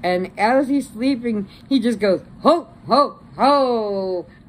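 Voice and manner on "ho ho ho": sleepy, booming, jolly laugh. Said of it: "thinking about Santa Claus".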